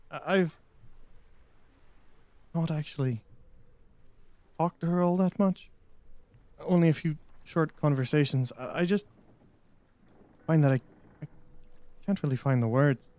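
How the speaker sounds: speaking quietly. Voicing a lovestruck dragonborn confiding so she won't hear: lowered voice. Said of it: "he kind of drops his voice".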